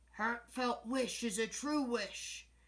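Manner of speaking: rough, gruff, growling bear voice. A narrator reads a bear answering a girl's wish by the river, gruff, growling voice. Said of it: "growled a gruff voice".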